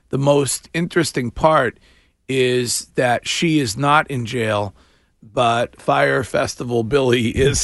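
ordinary talk

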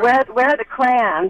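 normal talking voice

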